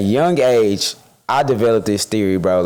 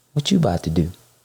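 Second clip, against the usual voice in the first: mock sleazy voice, lower; 4 semitones lower, 3 dB quieter than usual. Retelling what people at the club say: imitating a sleazy come-on. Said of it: "Why you say it like that?".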